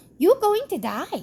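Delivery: bad put-on Indian accent. Retelling what a doctor said, in a bad indian accent. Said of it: "I can't do an Indian accent".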